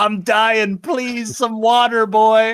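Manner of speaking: very loud, high, desperate shouted plea. Retelling a movie scene where a crushed old drifter begs for water: imitating a dying man shouting. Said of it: "who just shouts out".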